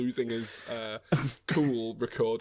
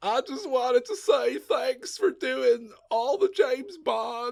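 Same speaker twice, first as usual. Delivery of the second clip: stoned-sounding voice, high pitch and raised; 13 semitones higher, 5 dB louder than usual. Joking with the others, doing a stoner Bill Clinton voice. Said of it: "It's turning into Stoner Bill".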